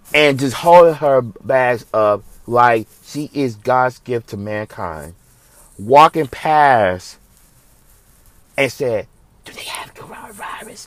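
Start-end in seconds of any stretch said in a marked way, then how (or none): 9.5-10.9 stuck-up, snobby, hushed whisper under the breath. Retelling a snobby lady passing at checkout: imitating a whisper. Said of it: "Just sounds so whispered".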